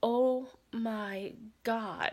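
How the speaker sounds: put-on terrified gasp. Retelling a frightening moment as marchers passed by: imitating own terrified gasp. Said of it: "I was so terrified".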